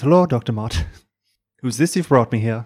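put-on gentle, mildly spoken Irish accent. Voicing a character greeting a doctor, the storyteller uses a soft-spoken Irish accent. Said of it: "Give me your Irish".

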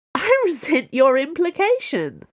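very high, swooping voice bubbling with laughter. Reading Aramis's reply to Athos's remark, laughing while speaking. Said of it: "but she was laughing".

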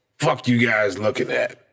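put-on acted-out drunken voice. Retelling how a drunk older man at the bar snapped at them, imitating a drunk man. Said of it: "he's drunk".

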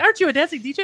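play-acted very high, loud, giddy gushing excitement. Speaker recalls a man coming over one night, imitating giddy excitement. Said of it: "like all giddy".

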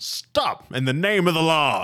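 delayed, slow, high yelling shout. Voicing a guard who stops a player: yelling. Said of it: "pauses longer than he should have before yelling that".

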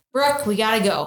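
plain

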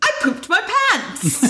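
very high, cheerful sing-song voice, acted out. Retelling a contestant's line from the show: imitating Eleanor cheerfully announcing. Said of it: "cheerfully announces that".

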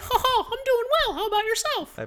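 high pinched cartoon voice. Answering a greeting, in a high pinched cartoon voice. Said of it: "are your like your vocal cords pinched".

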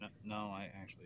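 mock beaten-down, deflated, slow defeated tone. Imitating the other speaker's answer about buying the hat: imitating a defeated reply. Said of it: "You sound, like, so defeated".

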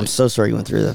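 sarcastic, mocking sympathetic tone. Answering another speaker's story about a bad experience: sarcastic. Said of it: "You're being sarcastic".

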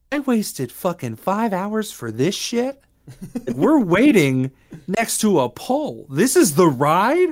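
fed-up, disbelieving, annoyed, high, drawn-out griping tone. Retelling what a friend said while waiting in line: imitating Taylor's annoyed complaint. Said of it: "I could hear her voice being like".

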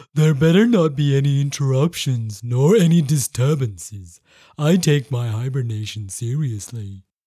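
very low, sleepy, half-asleep growl. Reading a story, the narrator voices Bear John settling into hibernation: sleepy growl. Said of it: "sleepily growled".

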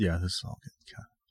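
quiet whispering. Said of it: "Is that why we're whispering?".

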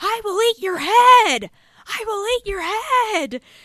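unhinged shriek, very high and very loud. Describing a scene where two characters argue, the speaker acts out one screaming. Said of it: "he just starts screaming".

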